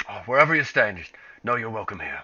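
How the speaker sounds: gruff put-on character voice. Voicing a character who welcomes the group: gruff voice like Ogden. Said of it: "That she sounds very gruff".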